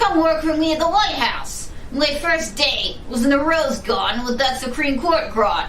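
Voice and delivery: casual, street-smart ex-convict voice. In a comedy solo piece, an ex-convict character reminisces: ex-convict character voice. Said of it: "when I got out of Supermax and couldn't find a job because of my record, / What you don't know is that [name] and I go back to my days in New York City. / Comedienne [name] presents her pre-Election D".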